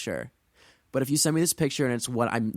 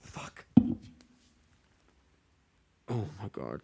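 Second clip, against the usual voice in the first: slow, breathy, deeply unsettled whisper of shock; 3 semitones lower, 3 dB quieter than usual. Reacting with a gasp to an unsettling search result: deeply unsettled. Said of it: "Are you deeply unsettled?".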